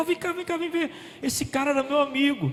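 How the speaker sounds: high, hushed voice, excited and eager.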